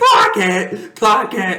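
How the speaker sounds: very slow, swooping, high, top-of-lungs scream. Retelling the final drive as the quarterback screams: imitating screaming at top of lungs. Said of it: "He's screaming at the top of his lungs".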